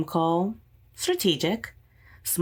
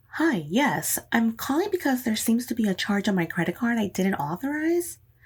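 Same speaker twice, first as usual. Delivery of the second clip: polished public radio announcer delivery; 5 semitones higher than usual. Showing how she sounds on a phone call when nervous, NPR pledge drive voice. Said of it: "sound like a fucking N P R pledge drive".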